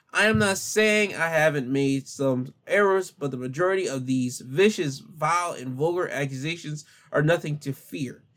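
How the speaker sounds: normal talking voice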